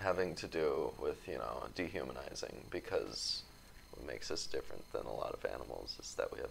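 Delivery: fast, quiet mumble.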